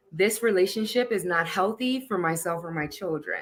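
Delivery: plain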